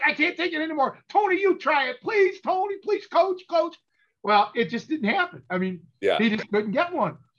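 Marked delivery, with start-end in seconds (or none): 0.0-3.7 screaming at a very high pitch, desperate. Retelling a held-down guy begging the coach, imitating his screaming.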